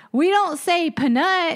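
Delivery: put-on very high, slow, drawling, thick South Carolina accent. Retelling a friend answering the teacher: imitating Marty's thick South Carolina accent. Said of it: "he's had such a thick South Carolina accent".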